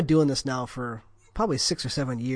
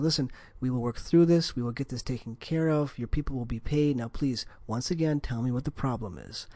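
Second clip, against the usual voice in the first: steady, soothing, soft, quick, almost boring reassuring tone; 4 semitones lower, 8 dB quieter than usual. Speaker shows how they talk when everything goes wrong, calm, reassuring tone. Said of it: "I need to maintain a very calm, reassuring tone and say".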